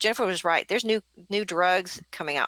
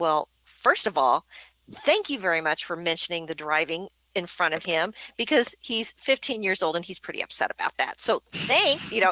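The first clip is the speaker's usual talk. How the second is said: ordinary delivery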